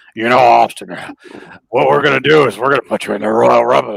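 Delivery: rough, raspy, creaky heavy smoker's voice, barely understandable. Imitating how Vince now sounds talking to Austin: imitating Vince McMahon's smoker voice. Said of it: "That's what he sounds like now".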